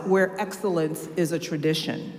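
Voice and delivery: plain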